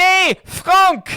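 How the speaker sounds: very loud, very high, shrill cry of anguish. Retelling how the chairman filming the free kick reacted: imitating an anguished cry. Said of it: "you can just hear the anguish in his voice as he goes".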